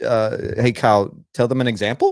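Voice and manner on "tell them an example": "example" tilting up in pitch. Demonstrating the rise while addressing Kyle: rising pitch on example. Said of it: "look what I just did".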